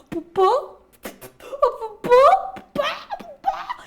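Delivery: mock very high, shrill, drawn-out, loud wail. Voicing a nightmare creature in a story: crying and screaming nightmare. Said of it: "gritar y a llorar".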